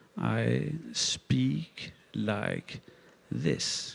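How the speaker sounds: slow, soft, drawn-out, deliberate speech. Talking about time, showing how slowing down sounds: slowed-down speech. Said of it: "If I slow down now".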